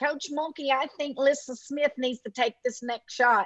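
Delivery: strongly nasal voice, every word through the nose. Coach describing which player might speak up, imitating Dee Dee Richards nasal voice. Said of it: "she's got a real nasally voice".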